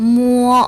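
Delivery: high, long, level first tone held on mo. Chinese lesson on the word 摸, mo in high level first tone. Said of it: "반듯한 높고 길고 평평한 일성입니다".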